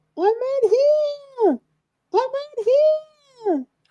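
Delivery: put-on muffled, very high, very slow young girl's cry. The narrator voices a young girl calling from behind the third door, crying out. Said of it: "The voice of a young girl crying out".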